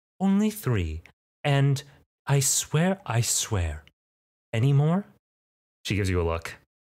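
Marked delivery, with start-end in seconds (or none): 0.2-5.1 put-on motherly voice, high, sing-song, unhurried. Voicing the mother speaking to her child: put-on mother voice. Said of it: "let's grab a voice".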